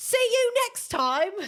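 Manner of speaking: put-on British accent, high-pitched. Signing off a movie and tv review, doing it in a british accent. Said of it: "I'll do the rest of it in a British accent".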